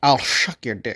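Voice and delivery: put-on Scottish accent. Reading out joke messages as an impression: Sean Connery impression. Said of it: "Ladies and gentlemen, Sean Connery".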